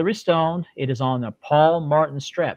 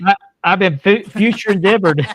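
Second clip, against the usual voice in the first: stammering, higher and louder; 5 semitones higher, 6 dB louder than usual. Joking about being released, between laughs with the others: stuttering. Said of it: "I'm stuttering tonight".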